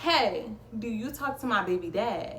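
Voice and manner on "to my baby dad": ordinary talk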